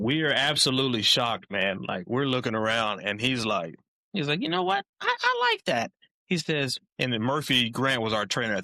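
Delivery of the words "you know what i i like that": put-on very high, raspy, swooping, rough football coach voice. Retelling the coach praising a player: Mangino impression. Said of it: "Your Mangino impression is hilarious".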